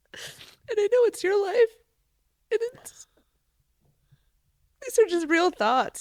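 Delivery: high, tearful voice talking through tears.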